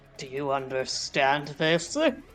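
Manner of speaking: ghastly, horrible, slurred undead corpse voice. As Eshe in a game, trying to be understood by the undead, slurred undead voice. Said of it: "She slurs out in a horrible undead voice".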